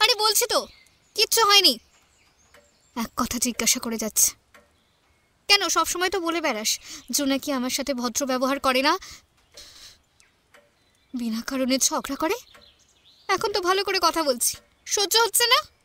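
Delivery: irritated, annoyed, worked-up outburst. Pressed again and again by a friend about what's wrong, irritated outburst. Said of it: "কাম down.".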